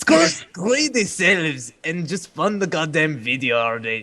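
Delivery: put-on Scottish accent. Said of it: "Scottish, Scottish".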